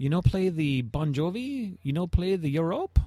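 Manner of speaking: put-on clumsy, butchered French accent. Quoting the owner who came up to him, in a bad French accent. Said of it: "butchering the, the French accent here".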